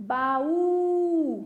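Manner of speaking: baú with the ú stretched long and stressed. Portuguese lesson on the strongest syllable of baú: shouted, last syllable ú stretched. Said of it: "eu puxei na sílaba U? É a sílaba mais forte".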